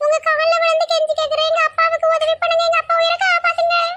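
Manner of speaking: high pleading voice.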